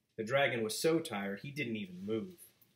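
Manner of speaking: plain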